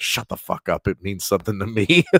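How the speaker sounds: loud, hissed delivery. Retelling a reply to a best friend: imitating hissing at a friend. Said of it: "I'm hissing at him".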